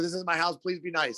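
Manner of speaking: acted-out shout. Retelling what she yelled when someone threw the door open, retelling a yell. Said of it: "I like yelled it".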